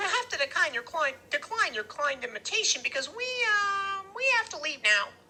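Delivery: very high, chattering voice with a stretched "um". Reading a story, Freak answers a man inviting him inside: Freak's chattery high voice. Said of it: "his voice is chattery high".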